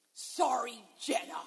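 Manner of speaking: mock half-hearted tone. Parent recalls their little son apologizing to his sister, imitating James's insincere sorry. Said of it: "that doesn't sound like that's really coming from your heart".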